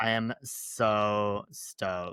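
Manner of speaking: very slow, heavy sarcastic drawl. Answering whether you are excited about the first episode: sarcastic. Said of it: "I see a lot of sarcasm in that".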